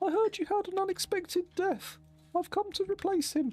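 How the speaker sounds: squeaky, very high-pitched character voice. Voicing a newly arrived migrant, the speaker uses a squeaky voice. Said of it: "I don't know why my voice is squeaky".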